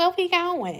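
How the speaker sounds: put-on soft, high, hushed little voice. Poking fun at how women answer a trip invitation, put-on soft voice. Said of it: "Y'all know we get that soft voice".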